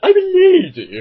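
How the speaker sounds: very high, loud, shrill, stretched camp lady voice. Reviewing a kids' character and mocking how he sounds, very camp Lazar voice. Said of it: "He sounds like that".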